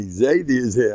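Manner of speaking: ordinary talk, nothing marked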